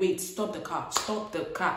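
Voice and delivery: ordinary talk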